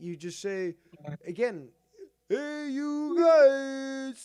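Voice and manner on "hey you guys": high, very slow, loud, dragged-out voice. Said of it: "a good Sloth impression".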